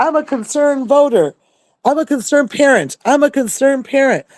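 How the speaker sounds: high-pitched hollering, same words repeated over and over. Retelling a woman who came in screaming the same words, imitating her hollering. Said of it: "she was hollering at the top of her lungs".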